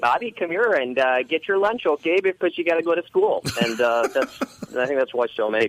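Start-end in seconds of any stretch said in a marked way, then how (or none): 0.0-3.4 put-on Minnesota accent, much higher and faster. Explaining where their generation learned the accent: Bobby's World mom, Minnesota accent. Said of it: "the mom just talked like this".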